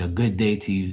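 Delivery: ordinary talk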